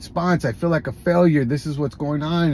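ordinary delivery

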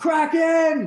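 put-on shouting. Calling out the kraken's name in character from atop a rock: in-character yell. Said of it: "I'm gonna yell out".

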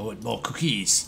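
odd, altered put-on monster voice.

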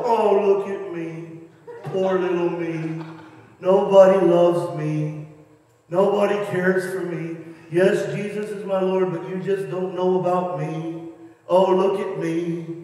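low, self-pitying, mopey, sulky moan. Asking listeners if they are just Eeyore, the speaker acts it out in a mock-mopey Eeyore voice. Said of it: "or are you just Eeyore?".

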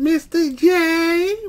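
very high cartoon voice with long, stretched J. Speaker says how he hears being called Mr. J; Harley Quinn voice. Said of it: "in that Harley Quinn voice".

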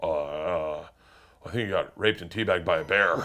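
acted bone-dry, very flat monotone deadpan. Retelling what someone said to the speaker on waking up: very dry, flat delivery. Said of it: "And just very dry, he goes".

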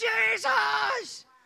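imitated crying and screaming. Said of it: "I'm just crying and screaming".

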